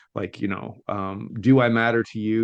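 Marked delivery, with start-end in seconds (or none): none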